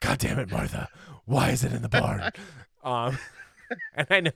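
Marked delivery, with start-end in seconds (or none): 0.0-2.3 rough, growling superhero rasp.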